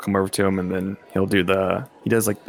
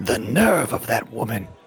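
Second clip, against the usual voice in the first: slow, hushed, conspiratorial stage whisper; 3 semitones higher than usual. Half-whispering to Paul about the woman who just stomped off: half-whispering. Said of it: "whispers to him".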